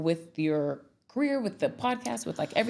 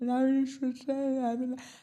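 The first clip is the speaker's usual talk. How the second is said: high, flat, bored voice with mock yawning; 7 semitones higher than usual. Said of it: "he'll yawn".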